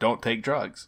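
put-on, mildly called out, yelling from a distance. Retelling how a mother dropped her son at a concert: imitating a mother yelling. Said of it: "she yells out of the car".

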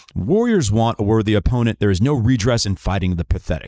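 normal talking voice

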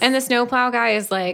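ordinary talk

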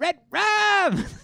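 shrill, very high, very loud shouting. Retelling a movie plot, voicing the boy a woman hears yelling: imitating Danny yelling. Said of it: "she hears Danny yelling".

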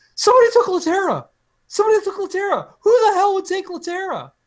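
very high-pitched, swooping, overjoyed excited shriek. Retelling own reaction to a trade announcement: imitating own high-pitched scream. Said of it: "my voice gets very high-pitched, and I screamed".

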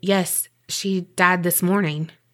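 ordinary talk

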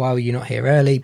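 ordinary talk

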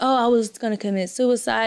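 ordinary talk, nothing marked

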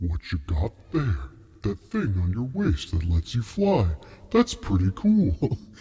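deep, swooping voice of a hulking giant. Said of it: "with the voice that he has".

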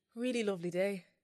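put-on Irish-accented voice. Asked to do a sentence in Irish, a speaker tries an Irish accent. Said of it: "Do a sentence in Irish".

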